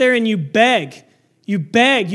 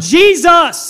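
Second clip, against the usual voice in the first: loud, high, begging cry, crying out; 6 semitones higher, 7 dB louder than usual. Speaker retelling a Bible story acts out a man crying to Jesus, retelling a loud shout. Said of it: "I'm not trying to hurt your ears".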